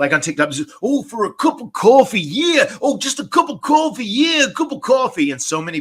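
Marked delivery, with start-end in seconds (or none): 0.8-5.3 very high-pitched wrestling promo delivery. Quoting a viral promo in the same impression: Macho Man impression. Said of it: "the one that has been circulating recently".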